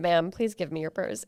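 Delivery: normal talking voice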